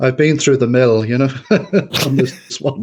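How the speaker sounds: talking through laughter. A guest answering an interviewer's question, laughing while talking. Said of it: "sorry, I'm laughing".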